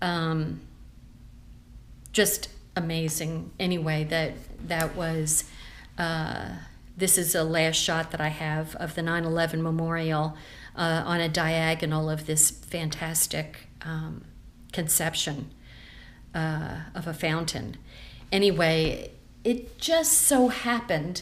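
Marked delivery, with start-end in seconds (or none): 19.4-21.2 slow, high, choked-up voice. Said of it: "now I'm getting choked up".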